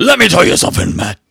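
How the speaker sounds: hyped-up wrestler-style talk. Pitching an idea to Matt: Hulk Hogan voice. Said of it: "I'm going into Hulk Hogan now".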